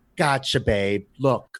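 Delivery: put-on Long Island-accented speech. Imitating a broker with a thick, raspy Long Island accent. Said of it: "a thick, like, kind of, like, Long Island accent".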